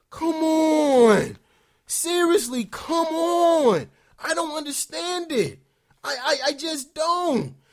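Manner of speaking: mildly upset, "on" drawn out. Fan venting about the Lakers' losing streak; a little upset. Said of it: "I'm a little upset, as you can hear in my voice".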